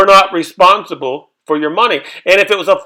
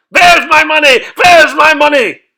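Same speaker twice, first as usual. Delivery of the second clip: high, loud, demanding yell; 8 semitones higher, 4 dB louder than usual. Retelling a story about a player who lost his money, imitating him yelling. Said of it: "He starts yelling".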